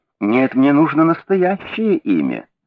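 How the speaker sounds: kindly, gentle, unhurried voice. A man answers a hesitant stranger who has just given a name; gently. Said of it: "ласково сказал Холмс".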